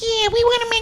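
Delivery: tiny, squeaky, very high little mouse voice. Speaker imagines how they sounded walking into AMC: high-pitched little mouse voice. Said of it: "like little mice with high pitched voice".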